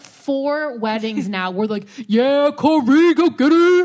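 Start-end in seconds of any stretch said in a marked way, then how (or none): 2.1-3.9 mock very loud, high football-crowd cheering. Retelling how the groom's friends cheered at weddings: imitating football-game cheering. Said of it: "Like it's a fucking football game".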